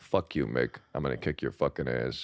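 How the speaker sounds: very deep, dropped tough-guy voice. Impression of an actor's Ray Donovan role: very deep Liev Schreiber voice. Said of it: "very deep voice".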